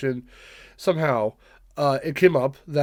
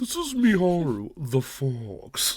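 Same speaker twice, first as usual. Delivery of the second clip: voice sounding slowed down, dragged out; 4 dB quieter than usual. Retelling how a TV introduction goes, in a slowed-down voice. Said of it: "that is a voice slowed down".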